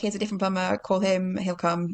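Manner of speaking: plain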